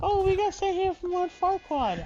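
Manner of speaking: high, loud, fairy tale creature voice.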